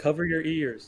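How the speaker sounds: mild, called out in a put-on character voice. Yelling a warning while a character jumps past: yelling a warning in character. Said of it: "I'm gonna yell out".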